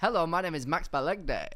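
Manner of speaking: very loud, big TV voiceover announcer voice. Repeating a podcast intro after remarking on how it was said, sound almost Iain Stirling-esque. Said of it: "almost like Ian Sterling esque".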